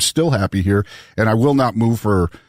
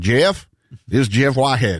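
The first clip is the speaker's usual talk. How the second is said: imitated Southern accent. Retelling a phone call from Jeff Whitehead: Jeff Whitehead's Southern accent. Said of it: "I don't have a Southern accent".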